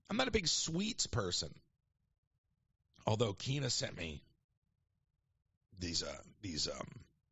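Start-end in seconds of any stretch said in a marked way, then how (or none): 3.0-6.8 low, hushed, secretive half-whisper. Looking around as if someone might overhear, half-whispering. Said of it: "I'm whispering".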